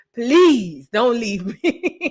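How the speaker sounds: put-on sobbing, snotty, loud, drawn-out, desperate tearful pleading. Acting out what one would do if a partner left: mock crying and begging. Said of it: "I be crying, snotting, begging, pleading".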